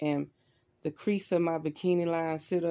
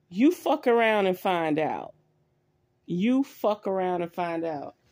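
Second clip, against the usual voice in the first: put-on commanding voice of authority; 5 dB louder than usual. Retelling what their astral body said to an entity, imitating an authoritative voice. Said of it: "It was a voice with authority".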